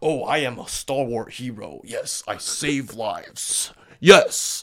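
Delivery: put-on stalwart hero voice, very slow and drawn out. Showing how a shaped voice sounds fake: fake stalwart hero voice. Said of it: "you shape or hone your voice so you sound like".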